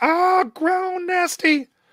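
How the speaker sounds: screaming in pain. Voicing wounded enemies as they are bloodied: screaming in pain. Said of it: "They scream".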